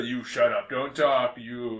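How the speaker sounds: put-on Russian accent. Improvising a scene with others, playing one of the Russians, in a Russian accent. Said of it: "What kind of accent is that?".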